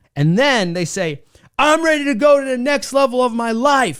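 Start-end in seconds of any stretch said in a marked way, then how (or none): 1.6-4.0 put-on, high, screamed with total conviction. Acting out someone declaring a commitment when pushed: screaming the line. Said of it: "And they scream it".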